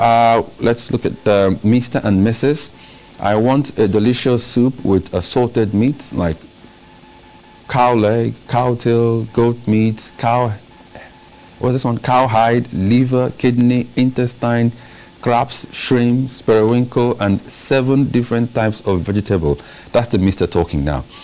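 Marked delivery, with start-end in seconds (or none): none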